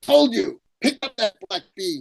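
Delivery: put-on cranky old man voice. Retelling a funny story, speaking as the old man: imitating a grumpy old man. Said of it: "an old grumpy man".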